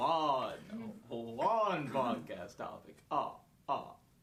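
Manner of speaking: "one" dropped low in pitch and stretched. Podcast host announcing he'll talk this way all episode: the Count voice. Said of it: "I'm going to talk like the count".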